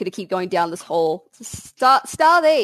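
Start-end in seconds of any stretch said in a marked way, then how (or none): 1.4-2.6 piercing, very high, loud yell. Searching down a hall for a missing companion: yelling a name. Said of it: "I'm just yelling".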